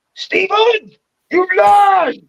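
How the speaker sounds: mock very high, sudden, enraged furious cry. Retelling how the woman suddenly turns on her boyfriend: imitating a sudden furious outburst. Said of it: "Suddenly on a kill mode".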